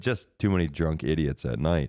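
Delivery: plain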